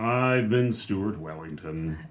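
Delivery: gloomy, defeated, depressed, downcast tone. Co-host signing off the show at the end of the first half, sounding depressed. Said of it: "You said it like you're depressed".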